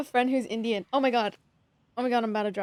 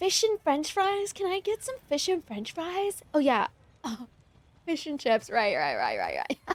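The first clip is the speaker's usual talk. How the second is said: put-on airheaded, clueless voice, sing-song and pitched up; 5 semitones higher than usual. Acting out ordering food to rage bait the locals: put-on playing dumb. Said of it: "I'm gonna rage bait them and I'm gonna be like".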